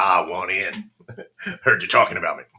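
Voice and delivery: put-on old Texan drawl. Acting out how he pops in after being talked about, old Texan drawl. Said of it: "why does he sound like an old Texan now".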